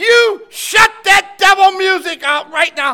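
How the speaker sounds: acted-out loud voice. Speaker recalls what they said when the music got too much: retelling a loud demand. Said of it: "in that loud".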